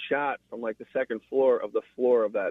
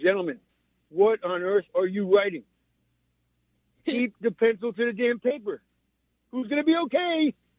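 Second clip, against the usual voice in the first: voice pushed way up high; 11 semitones higher than usual. Act out what you should have gone door to door and said, as a Harvey Keitel impression. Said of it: "They don't know I can do Harvey Keitel".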